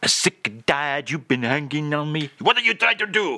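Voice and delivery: bad, fake, put-on French accent. Offering listeners a french phrase, in a bad french accent. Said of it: "That's my French accent".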